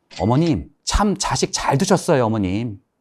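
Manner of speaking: loud, high, slow sarcastic tone.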